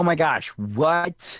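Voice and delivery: very slow, high, put-on fake excitement. Redoing a podcast plug after being asked to sound more thrilled: put-on thrilled reaction. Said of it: "you can sound a little more thrilled about it".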